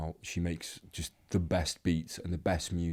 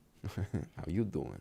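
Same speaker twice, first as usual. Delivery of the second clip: put-on convincing, soft, quiet New York accent; 5 dB quieter than usual. Cast as Joey in a UK Friends game, doing a Joey impression. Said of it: "That's a really good accent".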